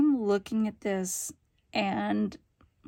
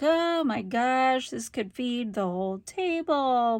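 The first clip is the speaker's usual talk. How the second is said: play-acted disbelief bubbling through laughter, amazed; 2 semitones higher than usual. Retelling a dinner where an enormous platter arrived, acting out laughing at the table. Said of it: "just laughing like".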